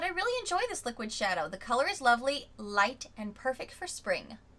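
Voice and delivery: ordinary talk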